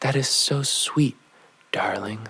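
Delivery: soft, gentle, loving, queenly voice. Quoting Mama's reply to the speaker's boast: imitating soft, loving, queenly voice. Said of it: "softly replied in the most loving and queenly voice".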